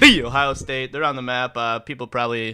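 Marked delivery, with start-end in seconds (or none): 0.0-0.9 all-out yell at very top volume. Speaker keeps yelling into the microphone about Ohio State: yelled loudly. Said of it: "You just got to yell it".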